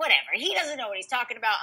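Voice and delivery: irritated, dismissive tone. Retelling getting into the hospital elevator: retelling own angry remark. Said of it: "I was so pissed".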